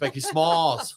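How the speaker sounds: called out loud and clear.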